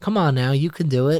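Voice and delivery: coaxing, sweet, gentle voice with slight Southern twang. Retelling how Millie encouraged Bill: soft, sweet southern twang. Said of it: "that softness and that little southern twang in her voice".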